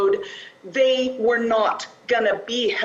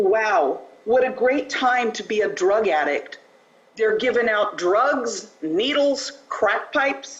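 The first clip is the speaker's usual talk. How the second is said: put-on, biting, dripping, total sarcasm. Speaker quotes a woman they visited and tried to help, retelling sarcastic remark. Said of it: "She said with total sarcasm".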